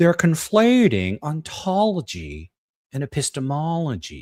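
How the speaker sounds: bad put-on voice, slow, drawn out, big swoops. Asked to say something in a William Lane Craig voice. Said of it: "in a bad William Lane Craig voices".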